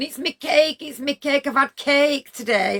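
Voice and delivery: put-on high, slow words bubbling through laughter. Retelling a man laughing after the speaker pokes his belly, imitating laughing speech. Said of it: "he's laughing at me going".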